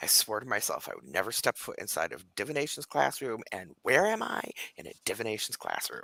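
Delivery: low, angry, cross, under-breath grumbling mutter. Voicing a character in a divination classroom: muttering angrily under breath. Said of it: "Vanla's kind of muttering under her breath".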